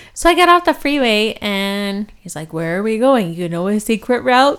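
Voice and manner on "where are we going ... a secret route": dopey, goofy cartoon bear voice. Speaker retelling what he asked after they left the freeway, Yogi Bear voice. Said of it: "do I talk like, Yogi Bear?".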